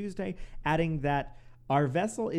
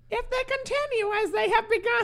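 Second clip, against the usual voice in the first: put-on old New York accent, very high pitched; 5 dB louder than usual. Redoing a quote in a put-on voice, now in an 1860s New York accent. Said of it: "a little bit more like New York in the 1860s".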